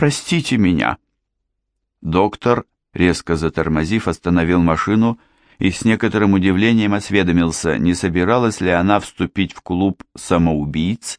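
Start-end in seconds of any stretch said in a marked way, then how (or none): 0.0-1.0 frightened babbling, higher pitch. A narrator reads Lady Deering apologizing to the doctor whose car swerved, frightened babbling. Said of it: "испуганно пролепетала леди Диринг".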